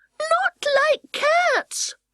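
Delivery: very high, shrill, passionate, impassioned mouse-like cry. Reading the story aloud, the mouse cries out to Alice: shrill, passionate mouse voice. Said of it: "cried the mouse in a shrill, passionate voice".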